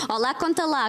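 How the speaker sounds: ordinary talk, nothing marked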